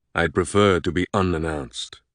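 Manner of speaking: ordinary delivery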